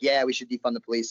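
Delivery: ordinary delivery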